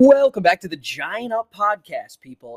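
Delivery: very loud, cheerful, happy voice. A podcast host welcomes listeners back to the show in a happy voice. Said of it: "if you can sense the happiness in my voice".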